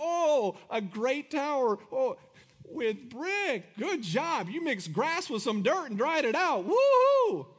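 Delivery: put-on, slow, sing-song, belittling sarcasm. Acting out God speaking to the tower builders: mocking, sarcastic God voice. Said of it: "He's totally mocking them, like".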